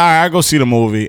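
plain

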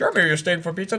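put-on Indian accent. Retelling how people would greet jeremy when he walked in, put-on indian accent. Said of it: "people doing an Indian accent".

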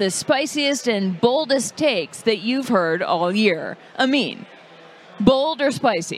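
mock announcer delivery. Host opens a game segment and asks a player to choose, announcer voice. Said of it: "I just put on an announcer voice".

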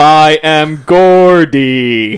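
put-on voice sounding like a sex robot. Introducing himself on the podcast, sounding like a sex robot. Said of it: "You sound like a sex robot of Gordy".

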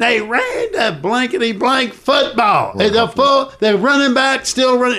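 mock, shrill, very high-pitched screaming rant. Retelling a coach screaming down the hallway after a loss: imitating Danny Ford screaming. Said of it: "I could hear Danny Ford screaming down the hallway".

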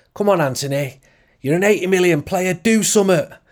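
put-on Mancunian accent. Quoting a crowd member's cry at Anthony, in a Manchester accent. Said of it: "in a really strong Manchester accent, far stronger than the one I just gave there".

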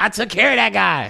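very high, very loud, rough belted voice. Retelling how a man answered about knocking over a motorcycle: Chris Rock voice. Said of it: "in the most quintessential Chris Rock voice".

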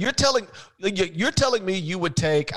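mock worked-up, sputtering, stammering, agitated disbelief. Retelling an on-air argument with Big John, imitating agitated John Thompson. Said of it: "he got so agitated by that".

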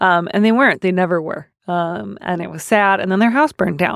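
plain

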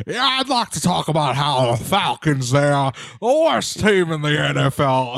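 put-on Texas accent. Retelling a prank caller to the show speaking straight up in a Texas accent. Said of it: "he says straight up in a Texas accent".

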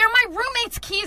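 high, loud, slow angry yell.

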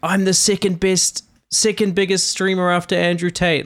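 acted-out, high-pitched, all-out yelling. Retelling how a caller shouted at the police: imitating someone yelling. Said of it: "he's yelling, like".

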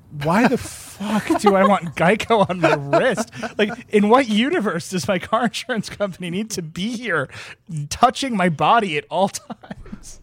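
sudden incredulous, disbelieving outburst.

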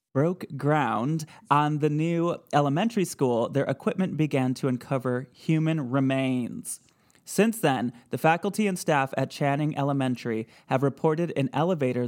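plain

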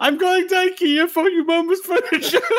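put-on Swedish accent. Co-hosts joke about a made-up Swedish word; attempted Swedish accent. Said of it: "I don't know if that's a Swedish accent".

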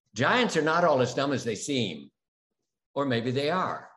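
normal talking voice

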